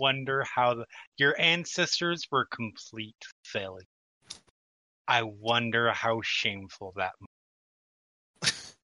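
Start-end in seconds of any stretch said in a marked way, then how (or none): 1.2-8.7 barely audible, very quiet, hushed half-whisper. Voicing a character who leans in to a glass: very quiet half-whisper. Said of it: "just very quietly whisper".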